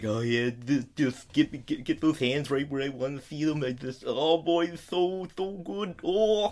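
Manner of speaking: slow, drawn-out climaxing voice, every word stretched. Imitating a character while watching a scene: imitating Mineta climaxing. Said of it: "Please do not ever imitate Mineta climaxing again".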